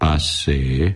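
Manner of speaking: bored, unenthusiastic and uninterested. The director dismisses a performer's bird-call act, bored. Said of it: "mondta unottan az igazgató".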